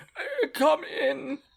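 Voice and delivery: very frail, feeble, creaky voice, very high. Narrator voicing someone inside answering a knock at the door, very frail voice. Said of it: "you hear a very frail voice from within call".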